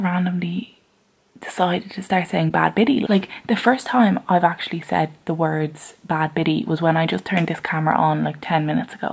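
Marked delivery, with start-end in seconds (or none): none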